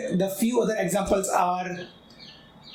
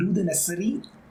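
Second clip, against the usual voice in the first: ordinary delivery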